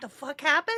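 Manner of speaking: squeaky, very high-pitched, caught-off-guard baffled outburst. Acting out the last person on earth to learn of 9/11. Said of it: "They're like".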